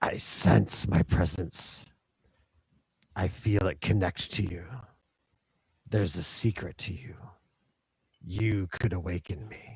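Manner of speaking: low, dark, gritty voice. Narrating for Ryland a voice he hears, in a dark, gritty voice. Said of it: "you hear in a dark, gritty voice".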